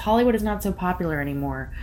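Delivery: ordinary delivery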